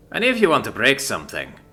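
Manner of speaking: ordinary delivery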